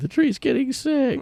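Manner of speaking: very high, sobbing, bawling wail. Retelling a skit where a character sobs over a tree: imitating someone bawling. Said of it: "He starts bawling".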